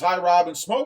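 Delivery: ordinary delivery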